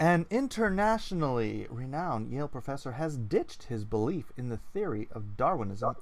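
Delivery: plain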